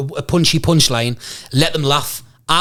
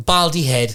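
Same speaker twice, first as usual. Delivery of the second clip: plain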